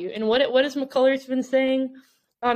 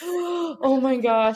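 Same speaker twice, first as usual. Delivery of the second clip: put-on startled, alarmed, gasping, freaked-out outburst. Retelling a partner's reaction while cooking dinner: imitating Olivia freaking out. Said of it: "starts to freak out".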